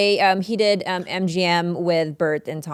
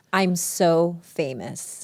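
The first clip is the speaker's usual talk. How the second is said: plain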